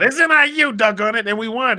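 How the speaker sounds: gleeful shout, high and loud.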